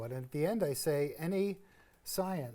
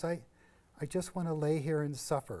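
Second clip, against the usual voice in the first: plain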